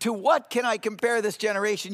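plain

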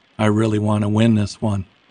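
ordinary delivery

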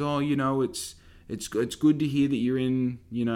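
put-on slow old-lady voice. Retelling what the speaker's nana said to them: imitating nana's slow talk. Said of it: "I'm talking slowly as if".

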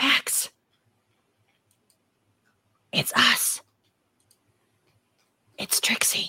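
loud stage whisper that carries far. A character calls out to Max, loud whisper. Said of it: "do like a loud whisper and say".

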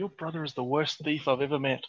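quiet, muttered under the breath. Voicing a character telling Edwin about his brother: quietly under her breath. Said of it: "quietly, under her breath".

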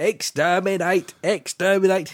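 loud, level shout, flat, with no tune. Doing the impression he just announced, Dalek impression. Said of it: "I want to do my Dalek impression".

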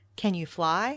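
ordinary delivery

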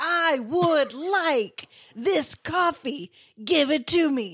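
bellowed, high shouting. Teasing the other speaker about how he orders coffee, mock-yelling a coffee order. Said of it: "why are you yelling?".

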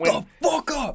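mock very high screaming yell. Retelling what a coach yells at the ref: imitating a coach screaming. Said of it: "He's screaming at the ref".

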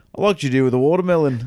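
put-on line in British accent. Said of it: "it was a British accent".

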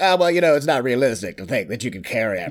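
put-on nerdy voice. Mocking what people always say, in a Fallout nerd impression. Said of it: "That's my Fallout nerd impression".

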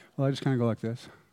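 mock unenthusiastic, lukewarm tone. Acting out a lukewarm churchgoer describing church: acting unenthusiastic, lukewarm. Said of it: "You sound pretty excited about this guy".

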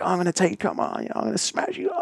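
high, put-on very angry, aggressive voice. Retelling a role-play where a man turns on officers: imitating an angry, aggressive man. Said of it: "very aggressive, very angry".

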